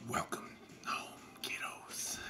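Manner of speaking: hushed, breathy, soft whisper. Voicing a creature speaking into the players' minds: whispering. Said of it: "remember that whisper?".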